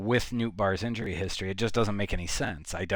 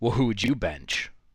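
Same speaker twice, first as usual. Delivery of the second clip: play-acted, dismissive, snide jerk voice; 3 dB louder than usual. Retelling how a manager answered a radio host: imitating a total asshole voice. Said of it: "in a total asshole voice was like".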